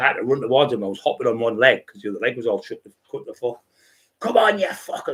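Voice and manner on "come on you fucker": mock wild, shrill, very high-pitched lunatic scream. Retelling hopping toward the attackers, imitating own screaming. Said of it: "screaming at them".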